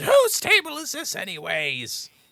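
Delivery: very high, very loud, shrill, swooping, drawn-out scream. Retelling a man screaming from behind the line, in the Zim voice. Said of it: "in the Zim voice from behind the line, he screams".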